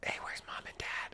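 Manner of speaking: soft, unvoiced whisper under the breath.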